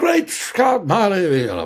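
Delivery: high, belted voice with big pitch swoops. Retelling doing voices in the schoolyard as a kid: Christopher Lloyd voice. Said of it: "talking like Christopher Lloyd".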